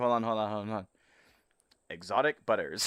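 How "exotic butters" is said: mechanical, extra robotic voice. Redoing the quote after saying it can sound more robotic: more robot-like voice. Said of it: "I can say that more robot-y".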